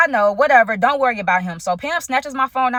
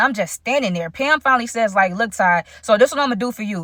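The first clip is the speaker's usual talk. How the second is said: usual speaking voice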